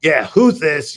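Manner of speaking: rude, ugly voice. Retelling answering a call from an unknown number, retelling own ugly phone voice. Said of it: "I had the really ugly voice on".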